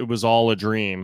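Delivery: ordinary talk, nothing marked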